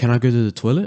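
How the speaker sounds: pitch lifting sharply high on toilet. Teaching question intonation with an example: high rising pitch on toilet. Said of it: "You see that high inflection point?".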